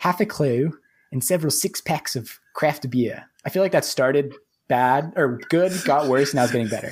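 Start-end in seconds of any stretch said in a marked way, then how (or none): 0.0-3.2 best-effort put-on Australian accent. Podcast host reading the show's intro, in a put-on Australian accent. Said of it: "I'll do my best Australian accent then".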